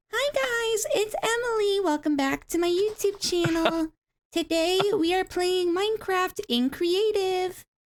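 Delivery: squeaky, very high-pitched voice. Asked about first playing the game, imitating own past squeaky, high-pitched voice. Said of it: "I had a very squeaky, high pitched voice, and I was like".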